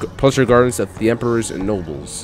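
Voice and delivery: ordinary talk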